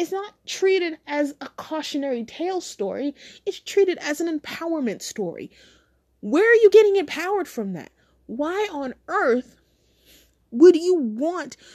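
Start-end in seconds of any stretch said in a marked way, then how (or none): 3.5-11.6 worked-up, angry, mad, heated delivery. Complaining about how a mature-rated story is treated, getting mad. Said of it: "I'm getting mad. I'm getting heated about this".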